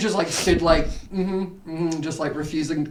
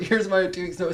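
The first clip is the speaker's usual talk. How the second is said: normal talking voice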